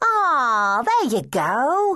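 cheery, bright, high voice, very slowly drawn out. A girl replies to Danny's answer, said brightly. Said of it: "the girl said brightly".

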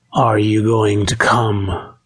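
plain

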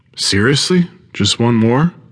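shocked. The narrator, on a long hike, replies to Tenzin, shocked. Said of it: "I'm shocked at this revelation".

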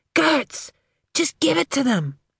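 stage whisper. Narrator urging a woman approached by a masked man: loud whisper. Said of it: "I whispered loudly".

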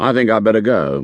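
ordinary talk

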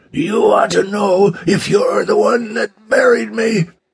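very high, dry, rasping, strained voice. Reading a story, voicing the man who answers King, in a parched, strained voice. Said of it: "the parched, strained voice said".

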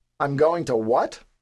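ordinary delivery

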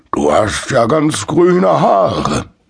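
put-on grandfatherly voice. Narrator reading the train conductor's remark to Bruno, grandfatherly. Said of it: "bemerkte er großväterlich".

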